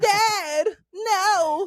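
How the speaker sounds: very high whiny little voice, "no" stretched out. Complaining about an anime character, the speaker imitates Gohan's whiny little voice. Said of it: "Like that little voice".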